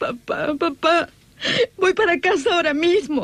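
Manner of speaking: tearful, crying voice. A daughter on the phone to her father, promising to come home, crying. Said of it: "no llore ahora".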